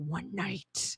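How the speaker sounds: hushed, whispered spooky storytelling voice. Asked to use a scarier voice for haunted stories, trying a scary story voice. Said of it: "use a more scary video voice".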